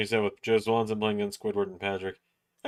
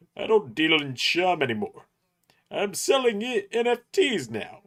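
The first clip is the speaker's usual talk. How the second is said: very high, animated, swooping cartoon voice with swinging pitch; 9 semitones higher than usual. Showing off an impression that has been in the works a little, in a Plankton voice. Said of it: "I've been working on plankton just a little bit".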